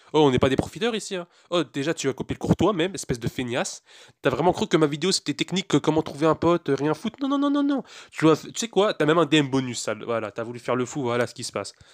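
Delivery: ordinary delivery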